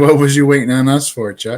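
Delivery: ordinary talk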